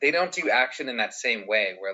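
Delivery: ordinary delivery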